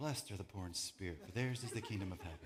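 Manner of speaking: soft-spoken, hushed, soft-talker voice. Reading the Beatitudes the way we imagine Jesus: soft-talker Jesus voice. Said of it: "soft talker Jesus".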